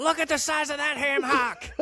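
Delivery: yelled at a very high pitch. Retelling a wrestling commentary line: imitating Roddy Piper yelling. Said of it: "Piper yells".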